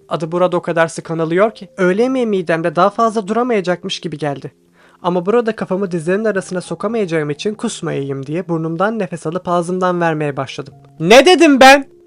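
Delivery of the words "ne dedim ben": shouting, louder, higher and slower. An instructor, running onto the mat after a student breaks an opponent's neck: shouting. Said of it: "diye bağırdı".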